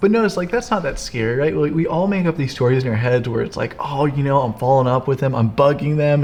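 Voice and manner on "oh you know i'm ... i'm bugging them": ordinary delivery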